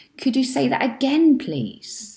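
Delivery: up-and-down rising tune on say that again. Speaker demonstrating for learners how to ask a question, questioning rising intonation. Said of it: "You see how the intonation. Of that question goes up and down".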